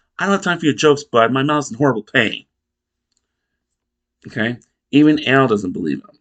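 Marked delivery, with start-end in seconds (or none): 0.2-2.5 acted-out, very upset, rushed protesting tone. Retelling a scene, the speaker gives the dad's reply to his son in a mock-upset tone. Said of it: "Very upset tone".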